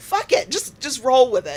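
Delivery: high, loud, carefree shout, laughing it off.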